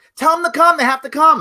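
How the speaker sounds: acted, very high, commanding yell. Retelling an order to the first sergeant: retelling a yell. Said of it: "I yelled at the, at the first sergeant".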